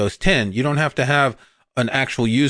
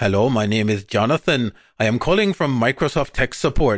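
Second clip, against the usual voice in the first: bad, mangled, put-on Indian accent. Imitating a tech support scam caller on the phone: bad Indian accent. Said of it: "any Indian people that I've massacred the accent".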